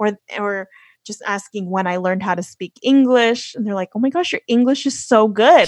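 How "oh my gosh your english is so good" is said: plain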